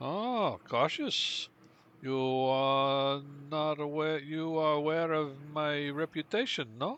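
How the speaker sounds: put-on Slavic-accented speech. Playing a character questioned about a woman he has stashed, in a Slavic accent. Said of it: "almost like Slavic in a way".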